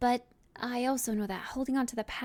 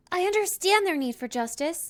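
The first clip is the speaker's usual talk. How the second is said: stern, firm, raised and pitched up; 7 semitones higher, 5 dB louder than usual. Recording a final take of the sentence, going more stern on the last part. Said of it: "a little bit more stern on the last part".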